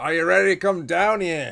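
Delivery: shrill, very high, very loud dwarf holler. In a fantasy roleplay, the narrator voices a dwarf calling in, in a dwarven voice. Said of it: "dwarven voice come in and says".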